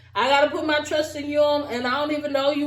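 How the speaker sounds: plain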